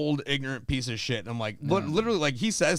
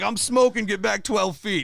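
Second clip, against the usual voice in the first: loud, high-pitched, barked yell; 6 semitones higher, 5 dB louder than usual. Speaker quotes a man on hospice yelling at people around him, imitating someone yelling. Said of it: "he's like yelling at this lady".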